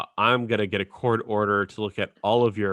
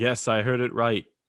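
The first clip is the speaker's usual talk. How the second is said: horrible, bad put-on British accent; 2 semitones higher than usual. Retelling a story, quoting a man who insists he heard the name right, horrible British accent impression. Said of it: "That was a horrible impression".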